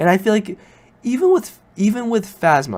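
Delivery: horrible high crack in the voice. A sick speaker mid-discussion, voice cracking. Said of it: "that was a very horrible voice crack".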